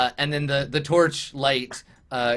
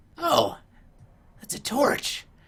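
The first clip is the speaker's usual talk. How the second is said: slow fantasy goblin creature voice; 12 semitones higher than usual. Voicing a goblin calling out in a hallway: goblin voice. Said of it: "he's like".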